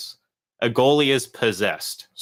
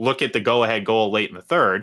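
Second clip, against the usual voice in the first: ordinary talk, nothing marked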